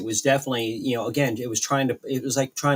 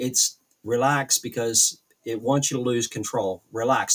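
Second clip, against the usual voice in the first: usual speaking voice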